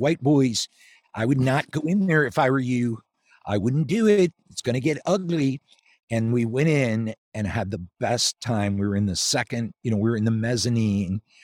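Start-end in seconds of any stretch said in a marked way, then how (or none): 0.0-5.6 put-on heavy Philadelphia accent, laid on thick. Retelling police warning the group walking up to the Spectrum: thick Philly accent. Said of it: "with their thick Philly accents".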